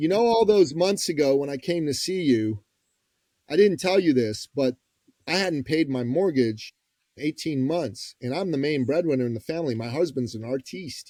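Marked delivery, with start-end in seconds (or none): none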